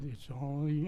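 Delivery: devil voice, low in pitch and soft. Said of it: "or the devil said".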